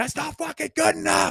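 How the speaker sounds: very high, raw, hoarse yell, voice cracking. Imagining someone in a locker room: imitating a hoarse cracking scream. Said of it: "screaming to the point where his, his voice is cracking and it's hoarse".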